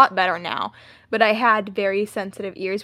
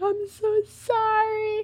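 play-acted, very high, tearful sobbing; 13 semitones higher, 4 dB quieter than usual. Retelling apologizing to a teacher after getting caught cheating, imitating crying. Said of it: "I was crying".

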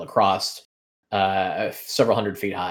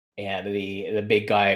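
normal talking voice

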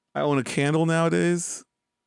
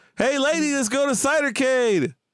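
yelling, much higher; 10 semitones higher than usual. A character calls out to a lady; another speaker says he's yelling. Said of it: "You're yelling".

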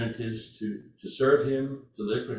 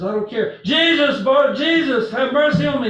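loud, pitched-up yelling; 12 dB louder than usual. Retelling a blind man crying out to jesus: imitating a man yelling louder. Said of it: "he yells louder and louder".

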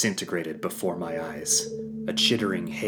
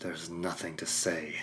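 through gritted teeth, quieter; 9 dB quieter than usual. A son refusing his father's offer to talk, through gritted teeth. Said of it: "I said through grit teeth".

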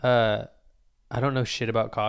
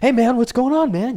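very high, very loud, over-hyped American accent; 13 semitones higher, 10 dB louder than usual. Showing how someone with an American accent sounds when hyped about something. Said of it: "if you have an American accent and you're hype about it, you're like".

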